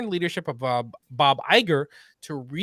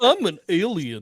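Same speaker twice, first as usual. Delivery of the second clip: silly, cartoonish comic character voice. Joking that Disney's aliens all sound like Goofy: Goofy voice. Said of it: "They all sound like, uh, Goofy".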